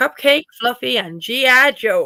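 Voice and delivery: put-on American accent. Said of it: "say that with an American accent".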